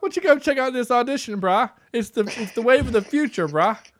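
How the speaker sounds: cartoonish Canadian accent, pitched high. Acting out Paxton inviting a friend to an audition: South Park Canadians voice. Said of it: "You sound like one of the Canadians from".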